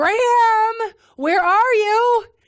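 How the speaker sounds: very loud, high, drawn-out full scream. Looking down the street for someone, retelling a scream of their name. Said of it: "and I scream".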